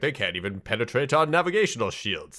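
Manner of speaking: usual speaking voice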